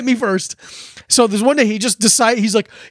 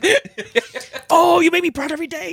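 whispered fight, higher; 6 semitones higher than usual. Acting out kids in a lunch note fight: whispering like The Other Guys cop fight. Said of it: "you're all whispering like the cop fight in Other Guys".

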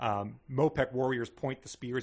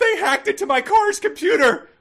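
yell, much louder and higher; 15 dB louder than usual. Recalling a movie trailer to a co-host, imitating Diane Lane yelling. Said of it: "Diane Lane yelled".

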